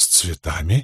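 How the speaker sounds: sudden fearful tone. Questioned about the flowers, she echoes the word back, frightened. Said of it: "похолодев".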